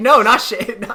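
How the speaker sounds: high, loud laughing, protesting tone.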